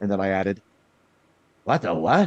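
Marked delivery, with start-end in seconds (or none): 1.6-2.3 put-on crotchety old man voice. Retelling a line recorded as the character Jin: Jin Buck voice. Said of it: "he's a crotchety old guy. He sounds like this".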